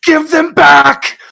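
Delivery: anguished screaming. Voicing a character who punches the ground over the clothes: screaming in pain. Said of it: "Just screaming".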